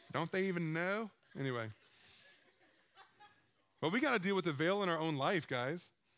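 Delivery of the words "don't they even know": odd, put-on southern accent. Getting onto a religious point, the speaker slips into a weird southern voice. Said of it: "like a weird southern voice always comes out".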